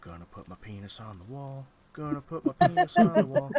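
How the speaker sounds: put-on character whisper. A game master voices Herbert for the players, whispering to himself. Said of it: "kind of whispering to himself".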